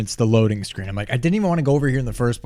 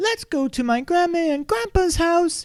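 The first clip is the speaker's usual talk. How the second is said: strange tune on sentence end, ending never settles. Describing how Peppa talks, imitating her; Peppa's weird inflection. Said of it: "she just has this weird inflection".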